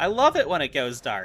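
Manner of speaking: said with sarcasm. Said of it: "Sarcasm, of course".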